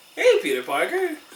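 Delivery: smug, knowing tone. Retelling a movie scene of greeting peter parker: imitating a smirking greeting. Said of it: "smirk on her face".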